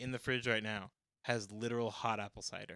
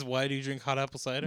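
usual speaking voice

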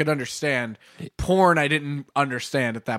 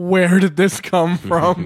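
put-on horrified voice; 3 semitones higher than usual. Retelling overhearing a mom tell a grandma about a computer virus: imitating a horrified mom. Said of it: "I could hear the horrific in her voice".

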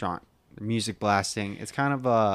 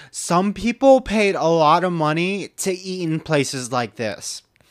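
high, loud, huffing delivery; 7 semitones higher, 6 dB louder than usual. Retelling what a lady said while staring at Eric, in a mock Karen accent. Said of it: "my Karen accent for the day".

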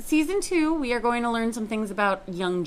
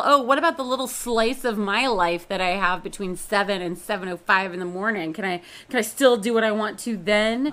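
usual speaking voice

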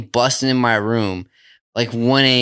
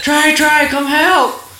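put-on screaming, higher and louder; 5 dB louder than usual. Retelling how they screamed for Trey: imitating someone screaming. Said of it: "we started screaming out".

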